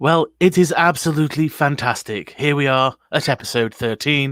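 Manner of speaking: loud, smooth, put-on radio announcer voice. A show host answers the opening welcome, in a radio voice. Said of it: "this is my radio voice".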